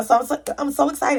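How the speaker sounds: stammering with excitement. Video maker celebrating twenty-one subscribers, excited stuttering. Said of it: "I'm stuttering".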